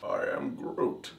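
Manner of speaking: breathy whispered voice. Doing an impression of Groot from the film: Groot impression. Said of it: "Every time I try doing a Groot impression, I go into Bane".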